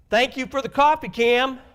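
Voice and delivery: very loud, high, exasperated, frustrated outburst. Contrasting two ways of thanking Cam for the coffee; frustrated tone. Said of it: "perhaps frustration".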